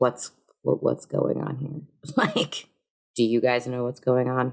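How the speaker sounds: low, quiet, hushed voice. Wanting to check on the others, the speaker asks what is going on: hushed tone. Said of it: "I want to ask like them in like a hushed tone".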